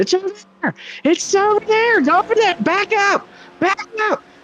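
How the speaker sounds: put-on, very high-pitched hollering yell. Commentating a race, acting out the driver's team: imitating a team yelling. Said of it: "his team is probably yelling at him".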